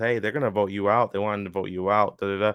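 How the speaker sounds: normal talking voice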